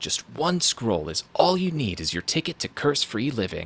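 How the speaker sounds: insistent, pressing, urging delivery. A voiceover actor demonstrating a directed line read, more insistent. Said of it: "but more insistent".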